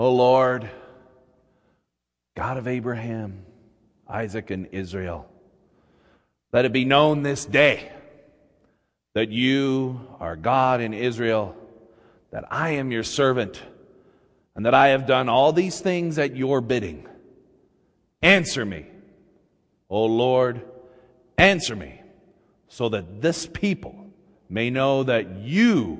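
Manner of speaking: imitated near-whisper. Retelling Elijah kneeling before the altar to pray, retelling a near-whisper. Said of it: "almost in a whisper".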